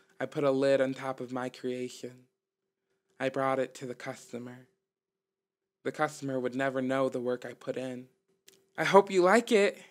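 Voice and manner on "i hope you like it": proud voice, high and raised. The speaker hands a customer a drink they made: proudly. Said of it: "I said proudly".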